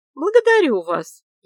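very loud, high, sly and snide voice. A woman thanks the accountant who agreed to answer her questions, snide, smiling. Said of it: "ехидно улыбнулась я".

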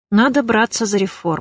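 ordinary delivery

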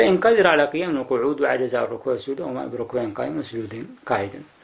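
plain

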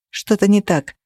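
plain reading voice

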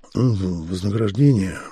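low, barely audible mumble under the breath. Asked what the notice says, he mumbles the answer barely audibly. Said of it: "Едва слышно промямлил Володя".

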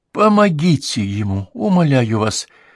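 crying out, holding back tears. A woman begs for help for a dying man, crying out, holding back tears. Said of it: "крикнула она, еле сдерживая слезы".

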